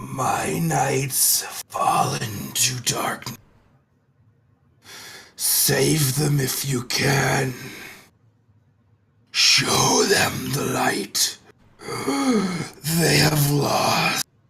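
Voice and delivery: very slow, hissing dragon voice. Voicing a fiery dragon addressing the players: hissing dragon voice. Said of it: "The fiery dragon hisses as it addresses you".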